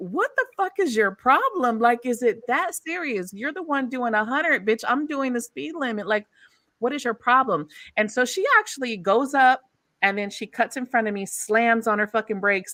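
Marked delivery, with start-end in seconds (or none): 0.0-7.7 play-acted, laughing, talking back through laughter. A driver retells answering a woman who honked and cussed at her; retelling a laughing retort. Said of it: "I'm looking at her laughing like".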